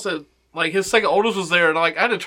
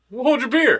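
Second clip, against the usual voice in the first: cross, angry tone with pitch raised; 6 semitones higher than usual. Saying a closing catchphrase to viewers: said angrily. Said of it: "Why did you say it so angrily?".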